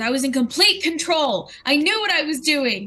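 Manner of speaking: bark-like sounds. A game narrator voices Lan answering the party, barking at them. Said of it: "she like barks at you".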